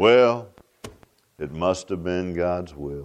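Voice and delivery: very low-pitched, downcast, gloomy voice. Imitating how some people speak, in a mock low, depressed tone. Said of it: "They'll speak in kind of a low, depressed tones like this".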